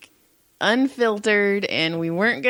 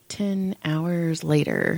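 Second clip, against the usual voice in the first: put-on muttering under breath, lower; 5 semitones lower, 3 dB quieter than usual. Retelling what a waitress said about a coworker: imitating muttering under breath. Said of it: "under her breath".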